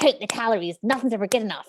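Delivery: put-on strict, uptight woman's voice. Sharing the eating disorder voice she created, she performs it: put-on strict woman voice. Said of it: "she's really strict and anal".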